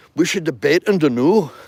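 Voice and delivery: loud, high-pitched put-on Scottish accent. Retelling an earlier message inviting someone to debate: scottish accent. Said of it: "hitting him up with my Scottish accent saying".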